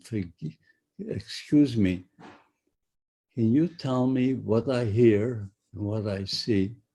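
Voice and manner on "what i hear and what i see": normal talking voice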